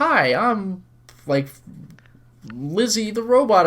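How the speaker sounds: slow, high-pitched toy-like voice. Describing a wind-up robot in a game: Lizzie the robot voice. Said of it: "with a key wind-up robot where it's like".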